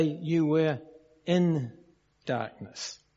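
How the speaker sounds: "in" stressed with a slight lift. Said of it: "It does not say".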